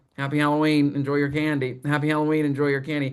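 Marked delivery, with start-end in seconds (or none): none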